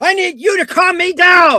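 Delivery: furious scream. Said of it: "she's screaming at me".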